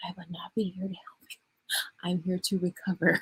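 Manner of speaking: pretend whispering. Showing a viewer what to whisper to her husband at night: mock whisper. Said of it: "Whisper that into his ear at night".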